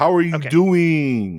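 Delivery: loud, very slow drawl, "doing" dragged out. Taking the first turn at a Joey impression: Joey impression. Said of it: "everyone does a Joey impression".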